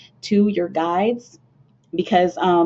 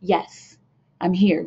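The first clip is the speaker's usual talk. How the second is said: mock bold, blunt, brash delivery. Acting out ancestors answering when called in during card readings: imitating a bold, brash reply. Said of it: "Very bold and brash and straightforward".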